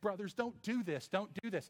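play-acted, high, desperate pleading. Retelling how he begged them not to send him away; imitating someone begging. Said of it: "when he was begging us".

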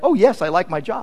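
normal talking voice

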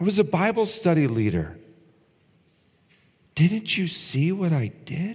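very high, astonished, pleading voice. Acting out people pleading with the Lord: acting out surprised pleading. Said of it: "Do you hear the surprise in their voice?".

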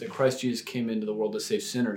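ordinary delivery

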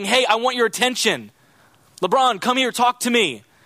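high, mild calling-out, beggar-like shouting. Acting out a beggar in a crowd calling for attention: imitating a beggar shouting. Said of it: "he stands up and he starts shouting".

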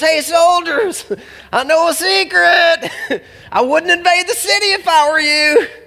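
high, slow, laughing taunt. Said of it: "he's probably taunting them".

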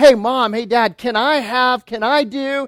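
put-on eager, excited child voice, high and drawn out. Acting out a child running to a parent: imitating an excited child. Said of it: "they're just so excited".

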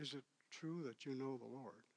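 hushed, secretive half-whisper. Retelling how a man asked a secret question: imitating someone half-whispering. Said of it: "Why are we whispering?".

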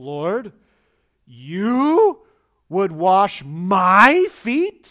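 booming, very slow outraged disbelief, stretching "my". Speaker demonstrating the tone of a scripture phrase, with mock-outraged incredulity. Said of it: "embarrassment and outrage mixed with incredulity".

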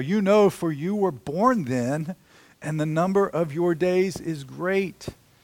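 cutting, biting, mocking sarcastic delivery. Reading God's words to Job aloud: imitating biting sarcasm. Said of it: "here's the most biting sarcasm of all".

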